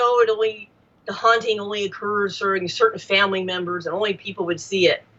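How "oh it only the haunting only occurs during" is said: ordinary delivery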